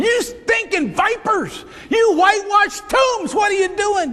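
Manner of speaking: all-out screaming. Retelling how Jesus confronted the Pharisees: imitating Jesus screaming. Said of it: "he's screaming at 'em".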